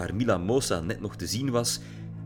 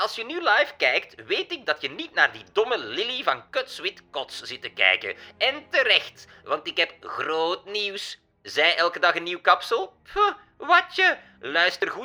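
much higher, nasal, irritating, whiny voice; 10 semitones higher, 5 dB louder than usual. A woman speaks to her live viewers, in a high, nasal, whiny tone. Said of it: "En op dat irritante toontje van haar zei ze".

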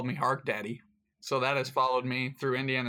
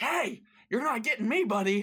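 very high, shrieking scream; 10 semitones higher than usual. Imagining facing a brown bear, screaming at it: yelling at a bear. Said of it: "you just start screaming at him".

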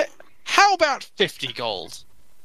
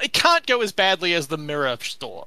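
normal talking voice

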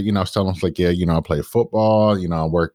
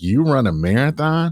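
mock laughing, higher pitch; 7 semitones higher than usual. Retelling how a man reacted to his plan to run a marathon, imitating someone laughing. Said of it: "he just bust out laughing".

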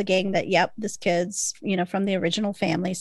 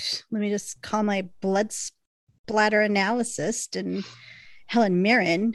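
ordinary delivery

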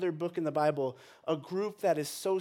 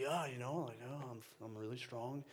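very quiet, mocking, put-on cool-guy voice; 6 semitones lower, 14 dB quieter than usual. Retelling what a new boyfriend said at Target: imitating a cool guy voice. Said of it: "keep hearing him just say".

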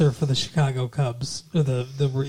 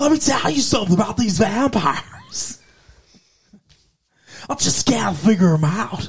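put-on baseball announcer voice, higher pitch; 7 semitones higher than usual. Doing a baseball radio announcer ranting about vampires: Harry Carey voice. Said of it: "That's Harry Carey for you".

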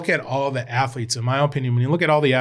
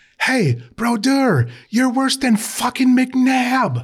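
very high, drawn-out, put-on hollering scream; 12 semitones higher, 4 dB louder than usual. Retelling what a kid at a hockey game yelled: imitating a kid screaming. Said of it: "Screaming that".

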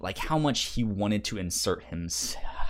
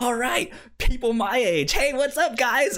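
put-on very high, loud, happiest chipper voice; 6 dB louder than usual. Retelling how the childlike hero greets the Teen Titans: imitating a chipper, happy tone. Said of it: "the happiest, most, like, ch-, chipper".

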